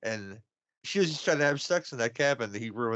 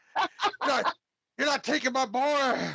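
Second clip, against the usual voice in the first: shrill, high-pitched, in-your-face yelling; 13 semitones higher than usual. Imagining a movie character's line to another: imitating someone yelling. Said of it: "just to yell at Rob Lowe's face".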